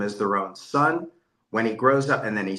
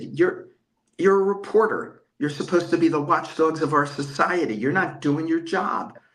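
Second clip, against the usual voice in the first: high, loud put-on screaming tirade; 6 semitones higher than usual. Recounting a phone call, screaming at a reporter, retelling screaming at someone. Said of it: "I started screaming at this man".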